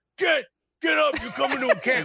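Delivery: high drill-sergeant bark. Recalling a guy who made someone cry and ordered him up, Big Dunk drill-sergeant voice. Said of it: "That's Drill Sergeant".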